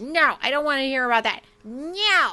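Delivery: high and firm, stretched no. Imitating Robert hearing about female bodies: Robert impression. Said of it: "that was a perfect impression of Robert".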